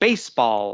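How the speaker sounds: baseball with stress on base. Teaching stress in a compound sport noun: stress on base. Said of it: "You stress the first word".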